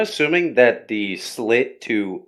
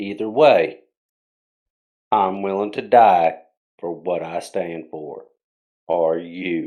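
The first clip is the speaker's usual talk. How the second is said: grave, solemn, very serious, somber voice; 3 semitones lower than usual. A figure warns those about to enter a door, very serious and somber. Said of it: "make my voice very serious and very somber".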